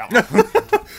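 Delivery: high, loud drugged babble.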